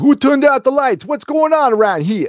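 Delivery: fake New York gangster accent. Retelling a movie scene where english actors fake accents: imitating bad new york gangster accent. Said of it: "English actors trying to do bad New York gangster accents".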